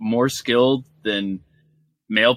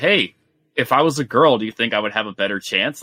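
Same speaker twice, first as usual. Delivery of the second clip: normal talking voice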